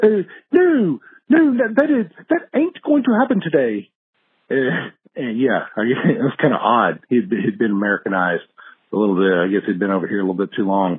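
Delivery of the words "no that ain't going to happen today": put-on London accent, much higher, slower. Quoting a former coworker from London, in his London British accent. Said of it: "he had a proper London British accent".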